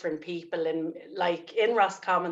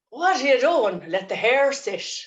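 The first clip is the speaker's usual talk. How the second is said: put-on Roscommon accent, raised and pitched up; 7 semitones higher, 6 dB louder than usual. Asked to do a Roscommon accent, quoting what granddad used to say; Roscommon accent. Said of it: "That's what my granddad used to say".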